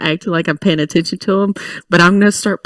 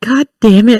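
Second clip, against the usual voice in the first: muttered quietly under breath, higher pitch; 4 semitones higher, 4 dB louder than usual. Reacting in character as someone walks past: muttering under breath. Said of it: "literally under my breath".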